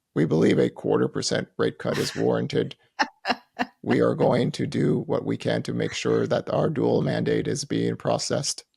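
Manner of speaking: low, creaky, mechanical robot voice. Mock-quoting the Fed: Robot Logan voice. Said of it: "That's like Robot Logan".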